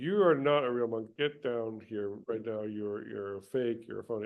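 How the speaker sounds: ordinary talk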